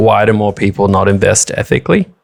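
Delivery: ordinary delivery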